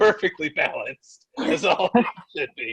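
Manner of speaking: voiced stage whisper, musing aloud to himself. Acting out a character who pees on the floor: imitating a character whispering. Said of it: "as he whispers to himself".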